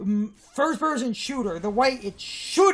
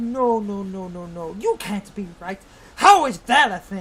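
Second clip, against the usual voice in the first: put-on, low, dismissive, condescending tone; 3 semitones lower than usual. Acting out a streamer who has seemingly never touched a Wii, mock-condescending. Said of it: "saying in the most condescending".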